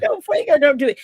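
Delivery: imitated tearful pleading voice. Retelling own words at spring break: retelling a tearful plea. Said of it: "He had me crying at goddamn spring break".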